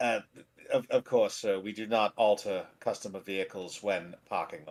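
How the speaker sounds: courteous, polite, deferential voice. In a tabletop game, the valet answers a guest; valet character voice. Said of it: "the valet is a human. / Uh, so the valet takes the reins from you um, and then proceeds to drive your carriage off. / Sir, would you like me to park your car?".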